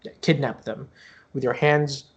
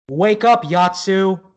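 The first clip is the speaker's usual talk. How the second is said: very loud, high, feminine-sounding voice; 7 semitones higher, 8 dB louder than usual. Voicing an older sister waking a sibling: feminine voice. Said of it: "you hear a feminine voice".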